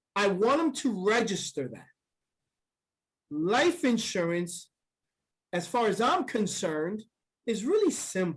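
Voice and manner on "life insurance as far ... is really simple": deliberate, methodical delivery, paused phrase by phrase. Demonstrating pausing while explaining life insurance: deliberate pauses between phrases. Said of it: "I pause methodically".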